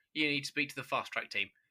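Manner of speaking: usual speaking voice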